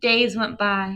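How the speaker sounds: plain reading voice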